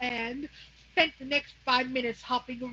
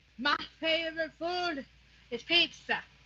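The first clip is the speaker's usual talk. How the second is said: slow, drawn-out put-on rural country accent; 4 semitones higher than usual. Trying out a sample sentence, in a put-on country accent. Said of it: "I'm gonna go with a country accent for this".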